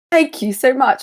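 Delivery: put-on distinguished London accent. A tabletop player thanking a character, copying the game master's London accent. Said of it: "I'm I'm adopting your voice".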